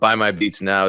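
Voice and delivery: ordinary talk, nothing marked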